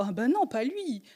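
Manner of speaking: caught-off-guard, surprised disbelief. Acting out her own past reaction to a betrayal: imitating her own surprise. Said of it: "je suis surprise en mode".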